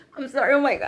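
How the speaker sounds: loud, fast, embarrassed speech spoken through laughter.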